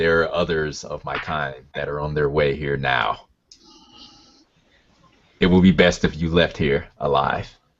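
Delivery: very deep, low, rolling rumble. Game master voicing a smiling giant addressing the players, deep, rumbling voice. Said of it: "with a deep uh, rumbling voice".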